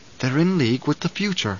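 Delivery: ordinary delivery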